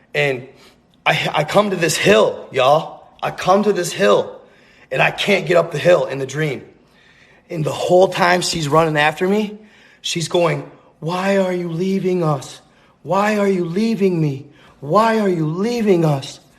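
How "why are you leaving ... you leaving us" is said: begging, pleading over and over. Retelling a dream of a little girl giving chase: imitating a girl begging. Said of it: "She's begging me to stay".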